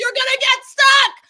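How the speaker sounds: shrill, very high, full-volume shrieking scream. Retelling how they reacted while watching: imitating own screaming. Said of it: "screaming at him, like".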